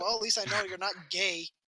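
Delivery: ordinary talk, nothing marked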